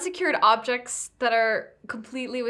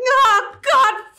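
high-pitched, loud yelling. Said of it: "they're yelling".

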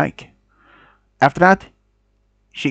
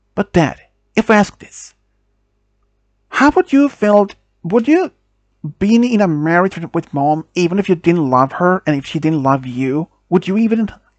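ordinary delivery, nothing marked

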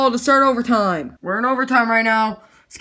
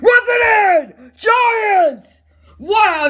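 very slow, high, stretched-out, drawn-out screaming; 9 semitones higher, 4 dB louder than usual. Commentating the Giants' overtime run for the viewers, scream. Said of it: "sorry I'm screaming".

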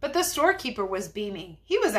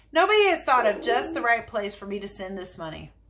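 plain

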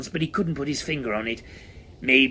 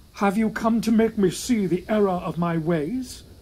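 feeble, half-hearted, pitched up; 8 semitones higher than usual. Narrator reading Cunnilingus's question to the phantom, feeble smirk. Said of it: "Cunnilingus smirked feebly".

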